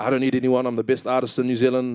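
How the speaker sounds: ordinary talk, nothing marked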